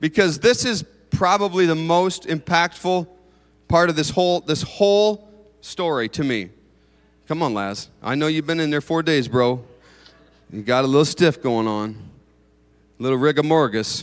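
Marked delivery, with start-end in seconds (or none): 7.3-14.0 deliberately cheesy, laid-on-thick corny delivery. Acting out calling Lazarus from the tomb: corny on purpose. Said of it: "I'm being corny on purpose".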